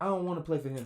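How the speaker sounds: acted complaining child's voice. Retelling what a kid tells his mom about the coach, imitating a complaining kid.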